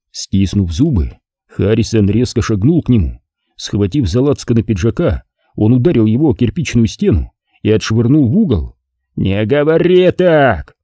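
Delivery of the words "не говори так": growled, slower pace. The boss, having slammed a man against a brick wall, growled. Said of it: "прорычал босс".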